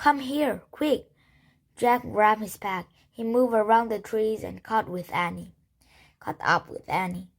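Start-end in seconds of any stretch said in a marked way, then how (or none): 0.0-1.1 high, pitched-up, half-whispery stage whisper. Reading a character calling a companion to come over quickly, in a half-whispery voice. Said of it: "Annie called in a whispery voice".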